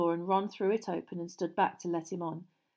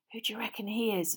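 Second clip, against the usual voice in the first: hissing; 5 dB quieter than usual. A character asks his companions who the stranger is, hissed question. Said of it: "Ron hissed".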